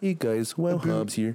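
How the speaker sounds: nice, pleasant Canadian-style delivery. Imitating a YouTuber's video intro: nice Canadian voice of Wowhobbs. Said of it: "with the most nice Canadian voice ever".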